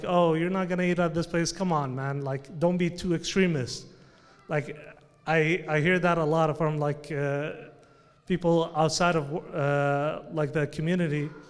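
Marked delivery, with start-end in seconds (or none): 0.1-3.9 put-on mocking tone. Retelling how friends make fun of a very religious person: imitating someone mocking. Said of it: "make fun of him".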